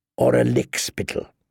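ordinary delivery, nothing marked

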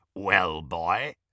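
rasping werewolf voice. The werewolf addresses Harry, the prisoner under the chandelier: Greyback's rasping voice. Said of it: "rasped the werewolf".

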